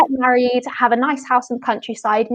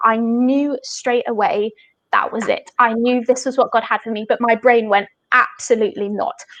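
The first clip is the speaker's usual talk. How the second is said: ordinary delivery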